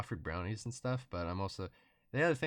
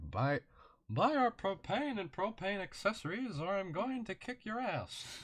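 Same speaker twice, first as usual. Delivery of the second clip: very high, pushed way up cartoon voice; 12 semitones higher than usual. Doing a voice that others keep asking for: Hank Hill voice. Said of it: "do the Hank Hill voice".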